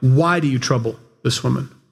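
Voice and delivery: heavy stress, leaning hard into why. Preaching on a Bible verse about Jesus, putting the stress on why. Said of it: "let's put the emphasis on why".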